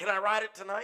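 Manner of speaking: mock eager little kid, high and loud. Retelling his question about riding the new bike: imitating an excited kid. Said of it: "He's all excited".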